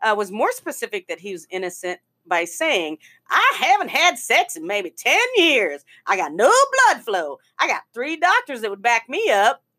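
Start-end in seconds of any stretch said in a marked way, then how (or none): 3.3-9.5 put-on thick Southern accent. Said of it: "why he's Southern all of a sudden".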